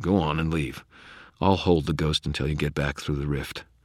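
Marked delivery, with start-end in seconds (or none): none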